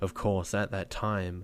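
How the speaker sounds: ordinary delivery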